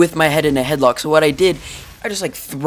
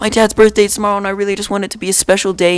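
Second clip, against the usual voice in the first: put-on, high, bawling, sobbing tearful voice; 5 semitones higher than usual. Retelling how a friend in trouble pleaded in the office, imitating him bawling. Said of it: "he just started bawling, and he's like".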